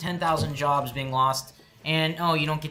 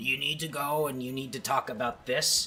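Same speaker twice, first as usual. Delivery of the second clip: put-on shriveled, withered old man voice; 5 dB quieter than usual. Imagining the person who hands over talking points: imitating Rupert Murdoch. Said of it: "shriveled old fuck going".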